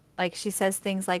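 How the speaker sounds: ordinary delivery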